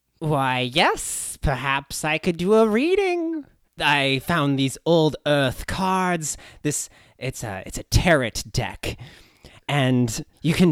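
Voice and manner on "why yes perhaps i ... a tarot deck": put-on nerdy voice, higher. Asked to use magic to find Jackie Cabbage, answering in a really nerdy voice. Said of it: "This is intended to be a really nerdy voice".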